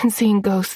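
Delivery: ordinary delivery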